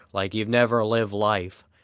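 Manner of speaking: ordinary talk, nothing marked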